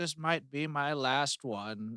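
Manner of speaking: soft, very slow, sad voice. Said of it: "he's like".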